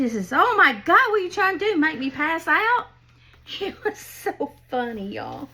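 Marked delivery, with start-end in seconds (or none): 0.3-2.9 loud, high holler. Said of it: "And he hollers".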